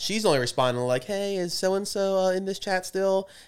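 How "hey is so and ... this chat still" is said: put-on odd girl voice, higher. Retelling what a girl writes in a group chat: imitating a girl's odd voice. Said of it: "Why do you think they sound like that?".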